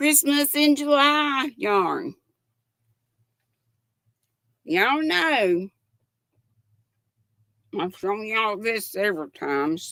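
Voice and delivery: talking with a full mouth. Showing a yarn while eating a gummy worm, talking with a full mouth. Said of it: "got a full mouth".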